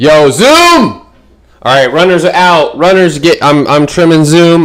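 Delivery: loud, hyped-up, swooping excited yell. Host greeting the group in the morning, yelling excitedly. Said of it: "I'm yelling at you guys this morning".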